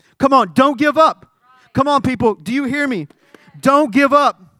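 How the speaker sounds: loud yelling. Speaker addresses the people listening and announces the volume: yelling. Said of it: "I'm yelling".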